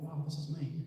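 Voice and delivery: plain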